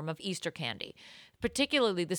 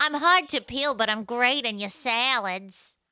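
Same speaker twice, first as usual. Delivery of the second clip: mock 1940s gangster girl voice; 5 semitones higher, 6 dB louder than usual. Voicing an egg in a comedy bit, Betty Boop-style gun moll voice. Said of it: "Like a 1940s gun mall egg".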